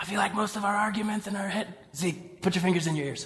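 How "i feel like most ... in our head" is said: much quieter, hushed voice. Speaker talks about arguments while someone is in the back, talking really quiet. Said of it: "I'm talking really quiet because Zeke is in the back".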